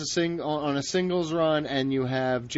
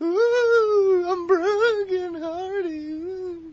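very high spooky ghost voice, ooh stretched; 3 dB louder than usual. On a news segment with co-hosts, bringing back a scary ghost voice. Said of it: "I'm bringing back in scary ghost voice me for this one".

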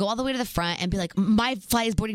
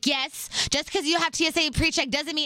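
impatient, raised, high-pitched scolding yell; 7 semitones higher than usual. At airport security, acting out the TSA lady yelling at her, retelling a yell. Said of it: "she's yelling at me".

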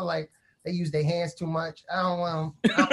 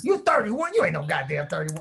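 put-on old man voice, slower.

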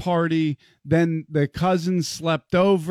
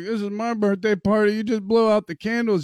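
mock tearful voice, higher pitch; 4 semitones higher than usual. Retelling a daughter's complaint at her birthday: imitating someone about to cry. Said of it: "She's about to cry".

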